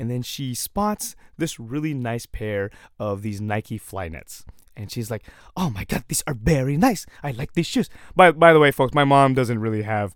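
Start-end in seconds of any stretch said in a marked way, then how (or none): 5.5-7.9 fake, put-on Filipino accent. Retelling how your mom reacted on spotting nice shoes, in a put-on filipino accent. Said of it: "I'm just doing that accent just to highlight the fact that my mom's Filipino".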